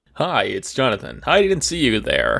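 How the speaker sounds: smooth, sing-song host voice. Greeting the host on a podcast: Troy McClure voice. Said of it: "that was my Troy McClure attempt".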